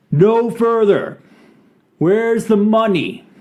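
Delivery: very high, commanding, loud calling out. As the group's apparent spokesman, calling out. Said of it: "you hear one of them call out".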